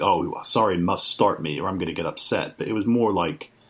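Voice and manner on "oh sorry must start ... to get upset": put-on menacing, threatening tone. Retelling how some people read a player's post-game words: imitating a menacing tone. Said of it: "some people took it, like, menacingly".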